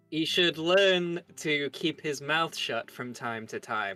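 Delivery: openly aimed, pointed remark, said to be overheard. A character remarks on a companion in front of the group, said kind of loudly. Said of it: "I say kind of loudly".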